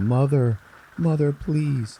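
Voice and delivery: desperate, high, tearful crying voice. Retelling a patient being sedated, begging the doctor: imitating tearful begging. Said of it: "she's crying and she's fucking begging".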